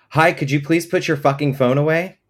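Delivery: very loud and high-pitched. Retelling what he said to a man who kept pulling out his phone: very loudly. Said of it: "said very loudly".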